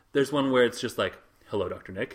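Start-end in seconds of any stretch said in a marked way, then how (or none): 1.5-2.2 very low, hushed, subdued, solemn, serious voice. Retelling how a crowd greets a character: imitating a subdued, serious greeting. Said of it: "kind of were into it, but a little bit subdued".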